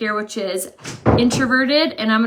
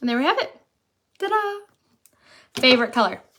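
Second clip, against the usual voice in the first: speech interrupted by hiccups; 3 semitones higher than usual. Finishing applying eyeshadow shades and showing the result: hiccuping. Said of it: "I keep hiccuping".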